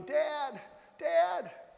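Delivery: very high, raspy, rough shout, acted out. Retelling sprinting back into the tunnel to call dad, re-enacting shouting. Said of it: "I began shouting".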